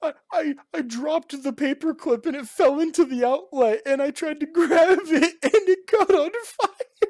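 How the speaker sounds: very high, loud crying voice, stammering. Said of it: "freaking out, crying".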